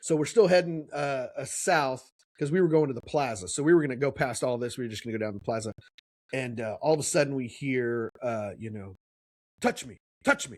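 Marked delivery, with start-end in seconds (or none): 9.6-10.6 mock angry, pitched-up voice. Retelling a streetcar ride, imitating a stranger they heard speaking angrily. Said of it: "like like angrily".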